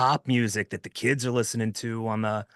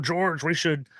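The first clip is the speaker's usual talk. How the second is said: old-timey cartoon villain voice, much higher; 5 semitones higher than usual. Imagining studio executives talking to george, in a 1930s cartoon villain voice. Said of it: "my studio exec sounds like like a".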